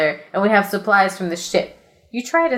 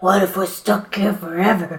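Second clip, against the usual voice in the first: quieter, hushed, soft voice. Stranded on an island, he asks his companion, in a quieter voice. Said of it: "He says in a quieter voice".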